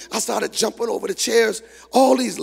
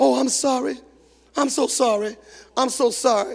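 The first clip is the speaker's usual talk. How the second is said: acted weeping, tearful crying, repeated words. Retelling how a crying mother kept apologizing: imitating someone crying. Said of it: "she was crying and looking around".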